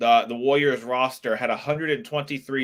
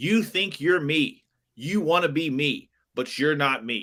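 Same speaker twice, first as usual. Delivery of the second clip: put-on scream, barked out but contained; 3 semitones higher than usual. Retelling what Draymond screamed at Grant Williams: imitating Draymond screaming. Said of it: "He was screaming".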